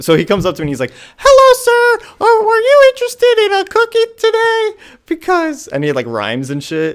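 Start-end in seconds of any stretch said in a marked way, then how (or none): 1.2-5.7 comically high, loud, polished salesman patter. Speaker retells a kid's sales pitch to him, in a comically high-pitched voice. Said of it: "comically high pitched voice".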